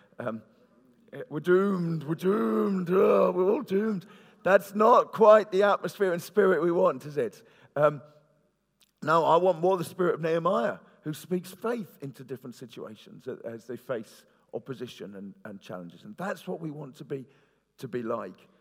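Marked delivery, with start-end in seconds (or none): 1.3-4.1 put-on high, loud Scottish accent. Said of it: "I can't say it in the Scottish accent".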